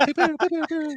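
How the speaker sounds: very high pew pew gunfire sound effect.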